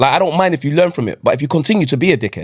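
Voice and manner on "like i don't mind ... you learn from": usual speaking voice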